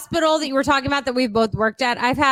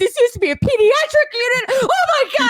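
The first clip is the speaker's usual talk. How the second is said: put-on panicked voice, higher; 10 semitones higher than usual. Retelling what a panicked nurse said about the empty room: imitating a panicked nurse. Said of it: "freaking out".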